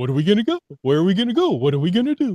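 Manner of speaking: put-on high, loud puppet voice. Asked to bring back the puppets, a speaker talks in a puppet voice. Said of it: "that was your puppet voice".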